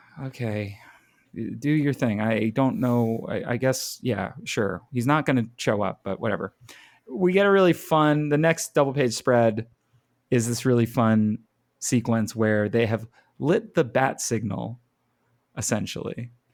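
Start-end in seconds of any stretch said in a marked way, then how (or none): 0.3-4.8 put-on deadpan, very dry, wryly sarcastic indifference. Imitating a comic character who goes along with an idea: dry Twitch impression. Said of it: "Very dry".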